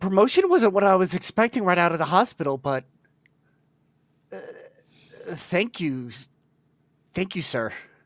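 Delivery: stumbling character voice. Just made fleet captain by a superior, Caddick stumbling over his words. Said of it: "Caddick's definitely stumbling over his words".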